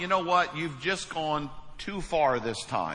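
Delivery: ordinary talk, nothing marked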